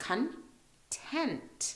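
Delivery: "content" with stress on second syllable "-tent". Teaching pronunciation of the adjective content, stress on TENT. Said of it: "so the tent part".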